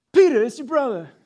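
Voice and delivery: shrill, high, loud, booming New York Italian accent. Repeating the line again, this time in a new york italian accent. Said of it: "it's really more like in the New York Italian accent".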